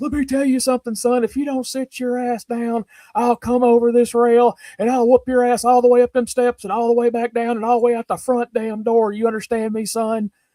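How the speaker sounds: high threatening tough-guy voice. Retelling a wrestler threatening a loud fan: Steve Austin impression. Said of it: "he comes over and he's got his head bobbed like this".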